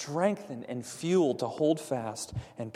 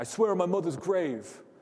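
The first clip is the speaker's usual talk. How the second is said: put-on Boston accent, man's voice; 5 semitones higher, 4 dB louder than usual. Explaining why people swear oaths, imagining an untrustworthy guy in a boston accent. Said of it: "the guy with a Boston accent".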